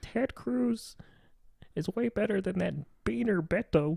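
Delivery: squeezed, high-pitched, croaky voice. Joke around on a podcast in a hardcore conservative Kermit the Frog voice. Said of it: "Kermit if he was a uh, hardcore".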